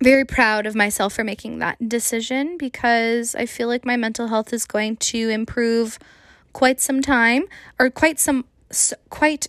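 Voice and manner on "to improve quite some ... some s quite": stumbling, halting, tripping over words with restarts. Talking on a podcast about a decision, stumbling over words. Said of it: "I'm stumbling on my own frickin' words".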